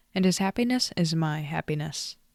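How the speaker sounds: ordinary delivery, nothing marked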